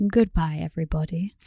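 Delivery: British accent in radio-presenter voice. Asked to say goodbye to the podcast listeners in a british accent. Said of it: "Do you want to say goodbye in your British accent?".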